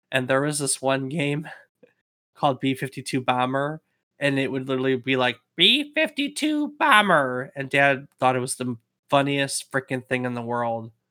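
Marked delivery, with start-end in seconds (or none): 5.5-7.5 very high, swooping, synthesized robot voice. Describing Dad's television game with a voice synthesizer module, imitating a voice synthesizer. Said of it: "it had a voice synthesizer module".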